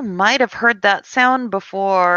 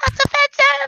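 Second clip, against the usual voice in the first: very high, tiny, squeaky mouse voice. Voicing a mouse running away, offended: talking mouse voice. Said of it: "the mouse, as he's running away, goes".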